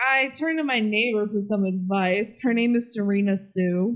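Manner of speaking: ordinary talk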